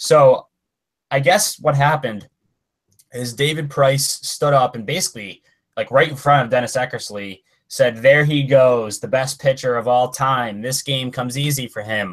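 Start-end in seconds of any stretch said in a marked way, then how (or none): none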